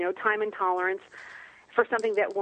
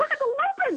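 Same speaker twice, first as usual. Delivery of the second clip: very high-pitched, sudden shriek. Retelling seeing lupins from the highway while her husband drove; retelling a scream. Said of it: "I'm screaming".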